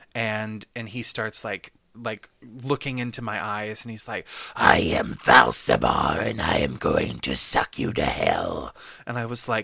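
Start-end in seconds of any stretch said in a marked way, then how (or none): 4.6-8.8 low, loud, possessed demon voice. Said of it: "possessed by a demon".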